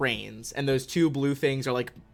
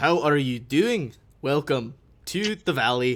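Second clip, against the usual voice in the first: mechanical robotic voice with rolling dwarvish burr. Voicing a robot modeled on a female dwarf: robotic voice with dwarvish burr. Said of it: "a dwarvish burr in its robotic voice".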